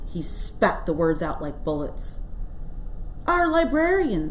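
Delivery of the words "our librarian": very high, squeaky voice. Asked by Bill who Lil is, the bartender answers, squeaking. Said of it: "squeaked the bartender".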